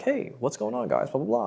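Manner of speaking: breezy, bright, high-pitched voice. Demonstrating how to vary tonality to keep people engaged, high-pitched. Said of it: "It can be high pitched".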